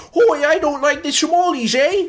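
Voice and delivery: goofy, silly, very high put-on Irish brogue. Mocking how absurd the situation sounds with all the accents: silly Irish accent. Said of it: "especially with all the accents".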